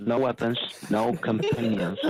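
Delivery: normal talking voice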